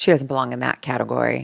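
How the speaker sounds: put-on muttering under breath. Retelling what someone said in the van: imitating muttering under breath. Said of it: "she kinda said it under her breath".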